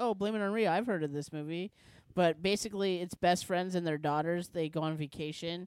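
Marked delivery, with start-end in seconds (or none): none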